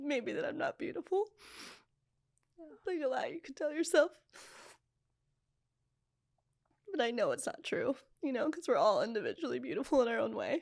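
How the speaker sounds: tearful, crying while talking. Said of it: "I'm already crying 'cause I know the answer".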